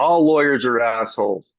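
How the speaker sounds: ordinary delivery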